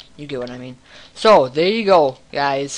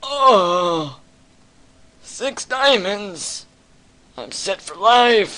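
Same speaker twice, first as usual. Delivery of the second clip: put-on high old-person voice, drawn-out "oh"; 6 semitones higher than usual. A gamer celebrates finding six diamonds, speaking in an old person voice. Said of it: "I just used an old person voice".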